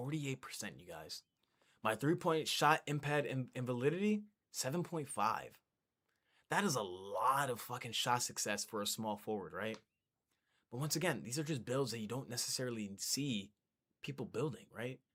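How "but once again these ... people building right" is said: whispering, much quieter. Going over a small forward's build stats for viewers, whispering. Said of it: "I don't know why I'm whispering right now".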